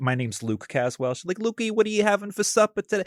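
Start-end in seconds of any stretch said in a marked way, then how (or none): 1.4-3.0 put-on very high Worcester Massachusetts accent. Imitating a mother asking about supper: imitating mother's Massachusetts accent. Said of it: "talks very much like that".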